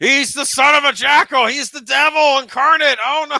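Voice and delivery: put-on loud talking. Acting out what a movie character might say at the house: pretend loud talking. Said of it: "loudly say".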